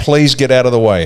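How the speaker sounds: plain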